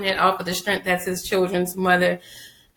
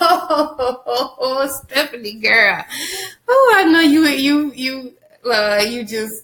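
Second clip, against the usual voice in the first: mock pity, high, far-off, laughing through it. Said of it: "I was like".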